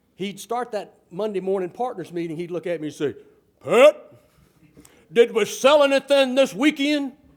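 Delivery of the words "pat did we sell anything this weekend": booming brogue, slow, high and loud. Retelling a partner's question at the Monday partners meeting: imitating Charlie Way's booming Orangeburg brogue. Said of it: "He had that wonderful Orangeburg brogue".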